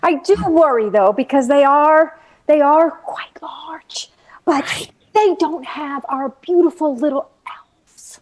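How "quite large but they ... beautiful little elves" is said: secretive little half-whisper. Joking about the company's large size, then adding a line: half-whispering. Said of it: "That's why I whispered it".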